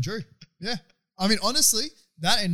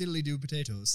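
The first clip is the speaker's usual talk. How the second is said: tossed-off, throwaway, bad Irish accent; 4 semitones lower, 7 dB quieter than usual. Retelling what a friend says when asked for an irish accent: imitating a bad irish accent. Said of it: "do your Irish accent".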